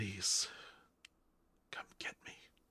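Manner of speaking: barely voiced, very quiet whisper. Narrating a scene, the speaker voices a man stepping toward the door, whispering. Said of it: "and whispers at you".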